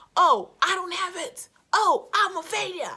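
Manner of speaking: very loud yell, building and rising high. A speaker urging listeners not to compare themselves, voicing self-doubt, shouting. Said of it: "Sorry for shouting".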